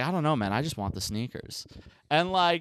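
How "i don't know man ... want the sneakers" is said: plain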